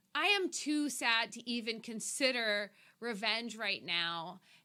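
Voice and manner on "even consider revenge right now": normal talking voice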